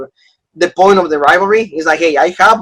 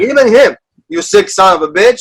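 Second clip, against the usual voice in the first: incredulous, disbelieving tone; 3 semitones higher than usual. Retelling a wrestler's promo line: imitating Drew McIntyre's outraged tone. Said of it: "in that tone".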